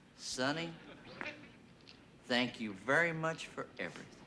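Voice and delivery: very soft, gentle, hushed voice. Imagining aloud what a visitor will say: imitating someone speaking very softly. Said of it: "he's gonna say very softly to me".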